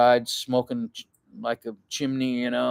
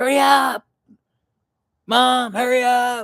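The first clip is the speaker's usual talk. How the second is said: mock very high, loud, drawn-out kids' yelling; 12 semitones higher, 6 dB louder than usual. Retelling kids in the car urging their mom: imitating kids yelling. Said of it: "the kids in the car going".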